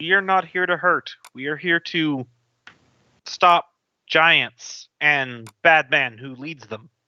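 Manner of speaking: weird, strange, broken speaking cadence. Playing Lucilla, speaking to a wary mountain dweller, in Lucilla's weird speaking cadence. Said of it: "this weird speaking cadence I'm doing right now".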